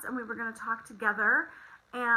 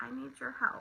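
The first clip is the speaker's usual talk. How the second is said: sweet, sugary, pleading voice; 10 dB quieter than usual. Retelling how a child asked for help: imitating a sweet voice. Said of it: "she looks at me with her sweet voice".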